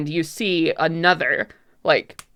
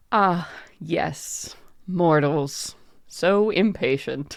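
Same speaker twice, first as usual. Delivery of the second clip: very slow, deliberate, drawn-out character voice. Answering the mortals who asked for light, voicing Domatia. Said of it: "you hear a voice clearing itself".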